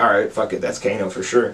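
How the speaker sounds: usual speaking voice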